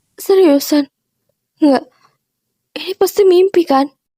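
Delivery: low, tearful voice sobbing through the words. After being broken up with, the speaker reacts, crying. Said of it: "jangan nangis".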